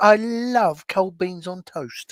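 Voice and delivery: put-on Yorkshire accent. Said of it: "bust out with the Yorkshire accent".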